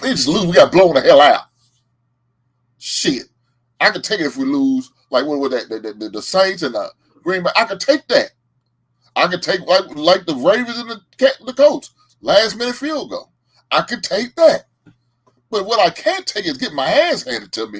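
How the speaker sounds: mad, angry venting rant rising in pitch. A Bears fan rants right after his team got blown out, angry and upset. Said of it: "I'm pissed and I'm mad because my Bears lost".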